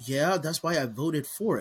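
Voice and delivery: smug, self-satisfied, know-it-all tone. Retelling the wife's reply about the library vote: imitating a smug remark. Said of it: "with this smug look on her face".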